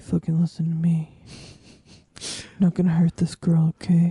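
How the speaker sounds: mock soft-spoken, quiet threatening tone. Retelling how a soft-spoken character threatened people: imitating a soft-spoken threat. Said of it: "soft-spoken person".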